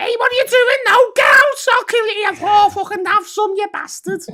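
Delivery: very high-pitched, loud, shrill Scouse accent. Pitching a Scouse Halloween parody to the others, Scouse Mike Myers voice. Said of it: "you just do a Scouse accent over Mike Myers".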